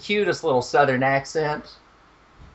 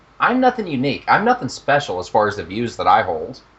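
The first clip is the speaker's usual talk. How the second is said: ordinary talk, nothing marked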